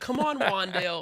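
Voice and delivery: put-on little kid cheer, high-pitched, r pronounced as w. Imitating a little kid rooting for Rondale, as a little kid who can't pronounce it. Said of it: "sounds like a little kid in Arizona rooting for Rondale who just he can't pronounce it yet".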